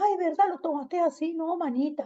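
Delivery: high, sweet, soothing and placating voice.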